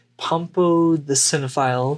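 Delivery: ordinary delivery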